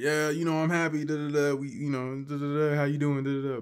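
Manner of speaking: put-on, fake-cheerful, happy facade voice.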